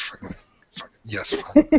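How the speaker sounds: very high, muttered under the breath. Sent to the principal's office, taking the note from her hands, muttering under breath. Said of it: "under my breath, just kind of mutter".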